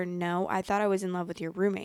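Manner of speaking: normal talking voice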